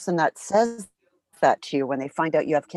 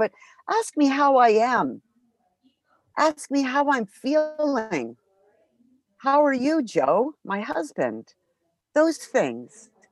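very slow, moved, heartfelt and emotional, pitched up; 6 semitones higher than usual. A person with cancer says what would have helped from others, getting emotional. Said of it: "I'm getting emotional talking about that".

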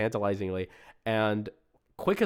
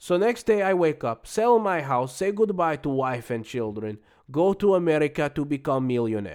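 raised, louder fake Russian accent. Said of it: "I'm gonna do it in an accent".

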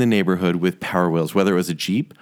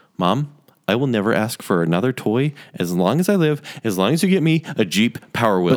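plain

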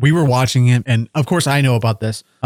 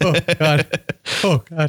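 play-acted very slow, high, drawn-out blubbering sob; 5 semitones higher than usual. Retelling watching a reconnection scene: imitating his own bubbling cry. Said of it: "the bubbling cry".

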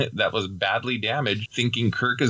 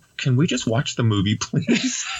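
plain

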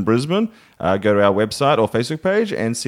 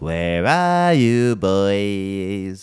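creepy, very slow, drawn-out butler voice; 7 semitones lower than usual. Predicting the next scene, the speaker voices the butler calling for the boys in a creepy frog man voice. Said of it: "some sort of creepy frog man".

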